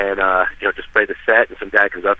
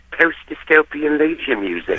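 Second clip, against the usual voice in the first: horrendous fake cockney accent, much higher pitch; 6 semitones higher than usual. Retelling Sean's answer in an interview, imitating Sean's bad Cockney accent. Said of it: "this horrendous uh, English, like Cockney accent".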